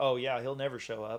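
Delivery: ordinary delivery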